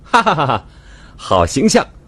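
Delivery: big, hearty, open laugh, very high. Dodging a swat from the woman he teased, he answers, laughing heartily. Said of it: "开怀大笑道".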